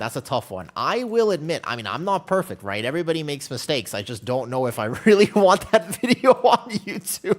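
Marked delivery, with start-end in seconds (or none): 3.9-7.4 speaking through laughter, higher and louder. Wondering aloud whether to post the video: laughing while talking. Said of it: "I'm laughing too hard".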